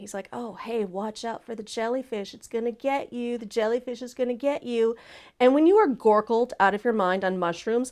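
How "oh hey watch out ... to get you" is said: needling, goading, mocking, teasing tone. Retelling how a companion on the beach taunted about a jellyfish: imitating someone taunting. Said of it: "he starts kinda taunting me".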